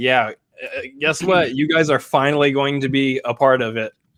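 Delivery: plain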